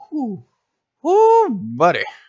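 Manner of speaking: voice cracking into squeaky break on whoo. Gamer reacting to a combo play in his video, voice crack. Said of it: "Excuse that voice crack".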